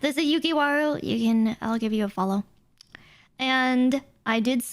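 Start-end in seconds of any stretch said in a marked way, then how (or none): 1.6-2.4 deflated, resigned, defeated, unexcited tone. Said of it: "why did she sound so defeated".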